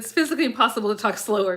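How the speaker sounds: plain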